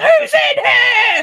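very loud, high-pitched, challenging yell. Retelling how their childhood best friend shouted into a building: imitating Tanner shouting. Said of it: "really shouting at it".

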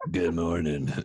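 seductive, sultry, just-woke-up sounding voice. Imagining waking up next to him, imitating a sultry voice. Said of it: "to hear that sultry voice".

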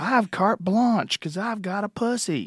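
shrieking, savage, high-pitched screaming rant. Retelling a comedy bit where Hicks screams at a heckler: imitating Hicks screaming.

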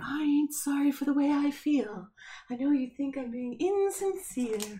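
soft, high voice of a magical unicorn. Asked by another speaker to say it again as a magical unicorn: magical unicorn voice. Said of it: "Say it again as if you're a unicorn, like a magical unicorn".

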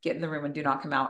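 very soft, hushed, super quiet, serious tone. Parent retelling words to the kids during a suspected chimney fire, super quietly. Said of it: "Super quietly".

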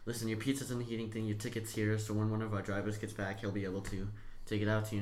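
ordinary talk, nothing marked

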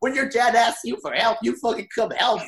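play-acted, high, furious, angry fatherly scolding. Retelling how a dad scolded his son afterwards: imitating an angry dad. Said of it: "he gets mad and he goes".

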